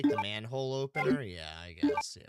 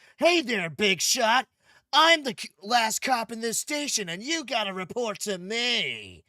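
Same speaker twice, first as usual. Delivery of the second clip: mock whiny young voice; 10 semitones higher, 9 dB louder than usual. Mocking a game character who sounds like a whiner: imitating a whiny Leon. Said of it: "he's just like".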